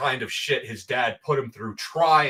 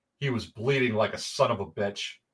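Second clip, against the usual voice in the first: ordinary delivery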